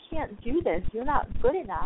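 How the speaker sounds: ordinary talk, nothing marked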